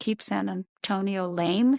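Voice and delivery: normal talking voice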